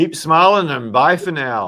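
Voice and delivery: loud put-on Australian accent. Signing off to viewers with a goodbye: attempted Australian accent. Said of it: "It's meant to be Australian accent".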